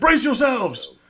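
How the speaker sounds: very high, loud barking voice. Voicing a ship's bosun warning everyone of incoming: barking order. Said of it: "you hear barking over the".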